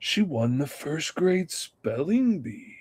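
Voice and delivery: sinister tone. Showing how plain news sounds ominous when read: sinister tone. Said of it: "you say it with that sinister tone".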